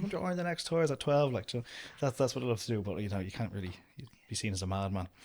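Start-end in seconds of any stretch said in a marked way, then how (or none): 0.0-1.3 high mock scream at full volume. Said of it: "you just scream from the top of your lungs".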